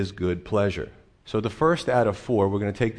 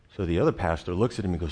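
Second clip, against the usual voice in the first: plain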